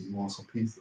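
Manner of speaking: whispered voice. Showing what you'd say to someone in your marriage, whispering. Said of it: "Just whispering?".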